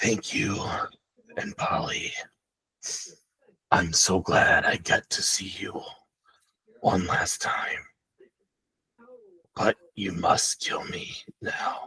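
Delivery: deep, horrible, throaty guttural whisper. Retelling a man's last words to Polly, in a deep, horrible guttural voice. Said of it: "he says in a in a kind of deep and, and horrible guttural voice".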